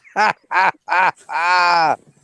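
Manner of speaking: slow, drawn-out, jeering, taunting ha-ha laugh. Telling jokes to Moises, doing a Nelson mocking laugh. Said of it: "the Nelson laugh".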